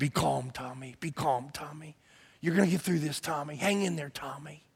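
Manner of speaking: very quiet, hushed, mumbled half-whisper. Retelling how a dad kept calming Tommy, in retold half-whispered mumbling. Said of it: "he just kept kind of whispering and mumbling".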